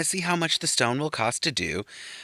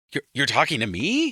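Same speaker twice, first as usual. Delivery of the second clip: fake, innocent-sounding surprised disbelief and confusion; 2 semitones higher, 3 dB louder than usual. Retelling how Mary reacted to an apology: imitating feigned surprise. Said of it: "Mary does the whole pretending thing".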